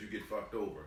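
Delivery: ordinary talk, nothing marked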